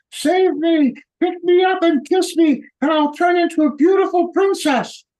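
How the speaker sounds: very high, screaming frog voice crying out. Telling a joke, the speaker voices a frog calling to an old man: screaming frog voice. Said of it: "Frog screaming".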